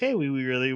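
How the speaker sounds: ordinary delivery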